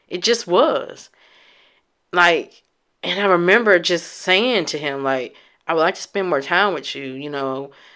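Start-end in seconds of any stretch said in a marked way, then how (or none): none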